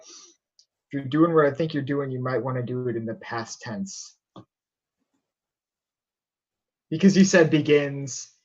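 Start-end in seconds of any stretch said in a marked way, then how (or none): 0.0-4.2 put-on low, deep disguised man's voice. In disguise, tapping a woman on the back to warn her, in a fake deep voice. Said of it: "fake deep voice of this disguised man".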